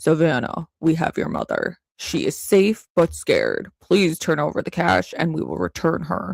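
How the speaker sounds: put-on old-school disguised, distorted voice-changer voice, direct. Showing how an old-school ransom message sounds; old-school voice-changer voice. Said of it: "those old school voiceover, like the voice changing".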